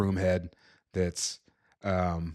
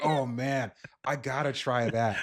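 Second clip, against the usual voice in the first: slow, high, spaced-out stoner drawl; 5 semitones higher than usual. Imagining a stoner in the Last of Us world: imitating a stoner. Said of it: "a stoner out there ... who's like".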